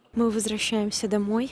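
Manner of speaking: usual speaking voice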